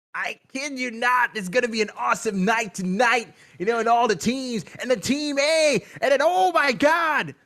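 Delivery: full-throttle, loud, high hype-caster shout. Hyping up tonight's matches for viewers, in a Super Clark hype-caster impression. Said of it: "I gotta save my voice".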